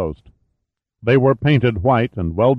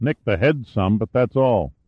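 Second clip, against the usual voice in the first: plain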